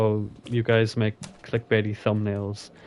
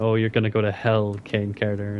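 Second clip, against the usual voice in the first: put-on crying voice. Retelling a breakdown on stream, quoting the words: imitating someone crying. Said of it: "had breakdowns on stream and started crying and saying".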